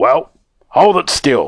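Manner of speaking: snarling, demanding tone. A principal speaks to a student showing him a ring, snarled. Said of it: "snarled Mr".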